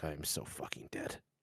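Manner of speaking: hushed, whispered mumble under the breath. Heading off with the group, the character mumbles under his breath. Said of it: "just mumbles under his breath like".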